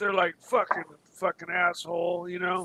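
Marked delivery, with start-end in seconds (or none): 0.4-2.3 put-on muttering under breath, lower and quieter. Retelling what jealous neighbors muttered behind his back: imitating someone mumbling under breath. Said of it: "they're mumbling under their breath".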